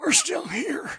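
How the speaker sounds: very high, loud, fake straining, labored voice. Joking about the tired old horses in an engine, he voices them, labored. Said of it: "that sounds labored".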